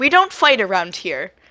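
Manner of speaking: menacing intimidation. Player making an intimidation check as their character: intimidating, puffed-up. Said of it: "kind of like puff up and be like".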